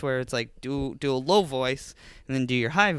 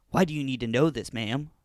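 mock suspicious, distrustful man's voice. Retelling how a man on the phone questioned the caller: imitating a suspicious man. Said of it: "Men were very suspicious".

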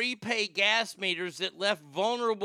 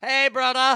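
very loud, high, belted British accent; 5 semitones higher, 10 dB louder than usual. Imagining a see-through version of him for a listener, do Dog the Bounty Hunter, British accent. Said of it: "with a British accent".

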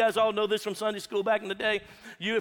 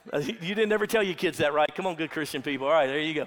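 usual speaking voice

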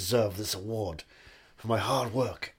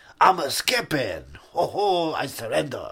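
hammed-up French man's accent, high and animated; 5 semitones higher, 7 dB louder than usual. Talking with another speaker, keep going with your French man impression. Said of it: "That's my impression of a French man".

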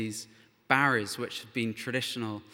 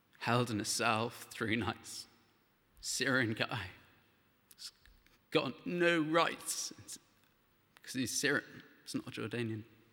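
quiet, emotional delivery, getting choked up; 5 dB quieter than usual. Telling the story of a Syrian man held in a cell, getting emotional. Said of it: "I didn't mean to get emotional".

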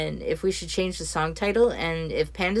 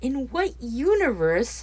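high, swooping, disbelieving, incredulous tone; 7 semitones higher than usual. Hearing hot wings paired with Jaeger bombs, the listener asks, incredulous. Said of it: "Sasha asked incredulously".

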